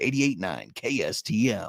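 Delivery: put-on classic deep old-school radio DJ delivery. Podcast host chatting with the co-host on air: old radio voice. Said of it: "breaking out the the old radio vo- voice".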